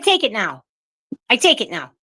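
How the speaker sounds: put-on cranky neighbor lady voice. Imitating the Saturday Night Live neighbor lady Mrs. Del Vecchio. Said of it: "Missus Del Vecchio".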